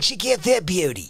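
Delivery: loud, clumsy, bad Australian accent. Quoting what the man always says, a poor attempt at his Australian accent. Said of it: "I can't do his".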